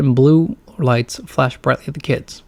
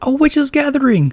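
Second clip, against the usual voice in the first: very high, excited, thrilled gasped cry; 12 semitones higher than usual. Reading Greg's line as he points toward a group of friends, gasping. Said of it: "gasps Greg".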